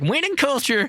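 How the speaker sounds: bubbly, gushing excitement at a very high pitch. Imitating a newly drafted quarterback arriving in New England: imitating Drake Maye, all excited. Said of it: "all excited".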